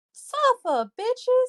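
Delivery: put-on voice, squealed way up high and shrill.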